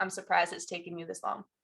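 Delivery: fast, flat, bone-dry deadpan. Recounting what the older one said to them: retelling a deadpan remark. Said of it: "looked at me deadpan".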